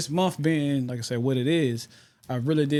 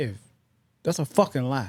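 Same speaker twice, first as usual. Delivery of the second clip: mock dismissive, blunt, straight-up attitude. Retelling what somebody told them straight up: imitating someone saying it with attitude. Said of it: "They said it straight up with an attitude".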